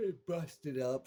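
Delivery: high, slow voice yawning through the words.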